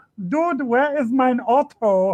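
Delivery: put-on German accent, very high-pitched. Retelling a bit done before a blockbuster film, in a German accent. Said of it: "in a German accent would go".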